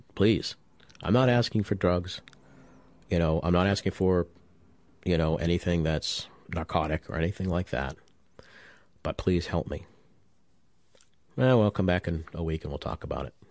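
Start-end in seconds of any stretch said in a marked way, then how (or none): none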